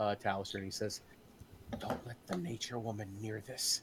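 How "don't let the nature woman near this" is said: soft, hushed whisper, very close. A game master voices a man leaning close to a character's ear, whispering. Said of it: "none of you hear this as he whispers it".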